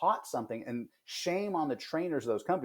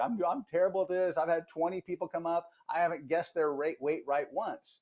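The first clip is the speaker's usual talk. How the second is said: high, mock blubbering voice on the verge of crying; 5 semitones higher than usual. Retelling a carnival weight-guessing scene to the carnival runner, imitating Steve Martin crying. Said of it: "Steve Martin's basically crying like".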